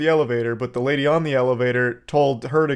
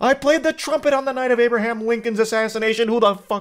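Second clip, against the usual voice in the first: mock angry rant, higher; 9 semitones higher than usual. Retelling a viral video of a trumpet complaint: imitating an upset man. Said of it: "gets really upset".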